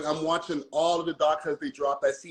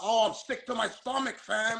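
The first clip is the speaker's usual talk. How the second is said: put-on slow, slangy Toronto accent with street-talk style; 6 semitones higher than usual. Mocking a clip people pull up about the Toronto accent, imitating Shorty's Toronto accent. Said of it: "they pull up the clip of Shorty talking about".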